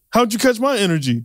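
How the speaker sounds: high, pushy, aggressive tone. Asking another speaker how they caught their energy: aggressive. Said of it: "the way you just asked that was so aggressive".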